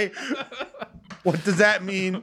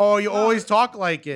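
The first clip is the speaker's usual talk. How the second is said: ordinary talk, nothing marked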